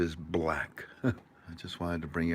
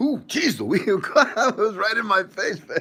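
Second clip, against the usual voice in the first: very high, very loud, drawn-out complaining wail; 10 dB louder than usual. Imitating Tink complaining about the image being in her face. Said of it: "Tink will give me stink eye and she'll say".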